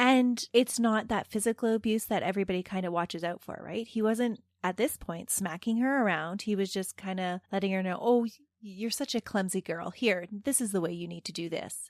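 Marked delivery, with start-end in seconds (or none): 8.0-11.7 put-on mock-affectionate, patronizing tone. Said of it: "Trying to make it sound like a term of endearment".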